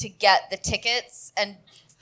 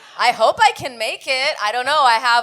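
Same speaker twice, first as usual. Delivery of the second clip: usual speaking voice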